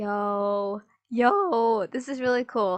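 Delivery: very slow, voice cracking mid-word on drawn-out yo. Speaker reacting to what they are listening to, voice cracking. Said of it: "Sorry for that voice crack".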